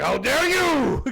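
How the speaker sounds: put-on very high, shrill, rough, creaky old-man voice. Describing how the game's voice actor said the line: imitating a traditional old Japanese man. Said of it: "the very traditional, like, guy, old Japanese, like, man, being like".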